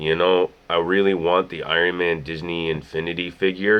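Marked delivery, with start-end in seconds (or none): none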